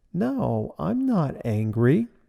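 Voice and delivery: mock sugary, very sweet, slow and very drawn-out. Retelling how she denied being angry: imitating a very sweet voice. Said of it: "She said in a very sweet voice".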